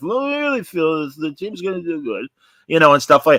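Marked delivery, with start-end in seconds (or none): 0.0-2.3 high, pitched-up mumbling voice. Teasing someone on the radio, mumbling Jerry Reinsdorf impression. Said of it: "I would do my mumbling Jerry Reinsdorf".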